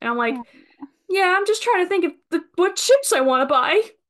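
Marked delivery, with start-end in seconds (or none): 1.1-3.8 put-on very high voice, talking through tears. Retelling answering an older lady in the aisle, imitating tearful speech. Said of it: "as I'm tears in my eyes".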